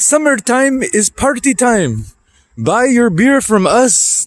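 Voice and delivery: put-on heavy, thick Indian accent, pitched very high. Quoting a convenience store worker's remark: thick Indian accent. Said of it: "said in a very thick Indian accent".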